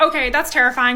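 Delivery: ordinary talk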